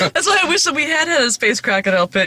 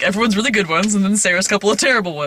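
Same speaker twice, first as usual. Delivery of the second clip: ordinary talk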